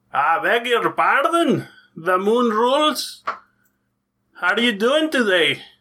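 horrible, put-on Scottish accent, badly done.

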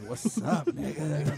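put-on sultry voice. Imitating another speaker's lost voice as her being sultry: imitating a sultry voice. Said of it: "her being sultry".

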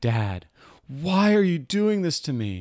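mock child screaming, high-pitched. A dad retells his daughter's reaction as he works on her foot, imitating a screaming daughter. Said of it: "She's screaming".

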